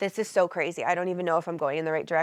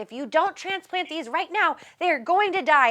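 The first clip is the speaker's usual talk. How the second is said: full-on, high, pitched-up yell; 10 semitones higher than usual. Retelling how someone yelled about transplanting tomato plants: imitating someone yelling. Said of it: "somebody was yelling at me".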